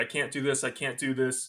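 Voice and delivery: plain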